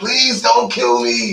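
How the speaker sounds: screaming, very high and pleading. Telling of a man about to be shot: imitating a man screaming. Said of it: "the guy was screaming".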